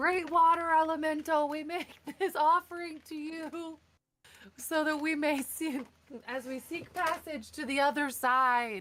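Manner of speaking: loud, high ceremonial shout at full breath. Calling out an offering to a water elemental: shouting to a water elemental. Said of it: "to shout to the water elemental".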